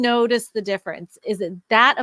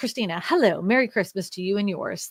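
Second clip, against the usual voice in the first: usual speaking voice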